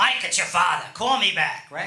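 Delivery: put-on older-style New York accent. Retelling the voicemail his father left him on his birthday, imitating his father's accent. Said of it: "someone is calling me with that accent".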